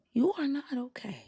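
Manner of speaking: deliberately soft, gentle tone. Repeating the remark to the other speaker in a gentle voice. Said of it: "This is my gentle voice".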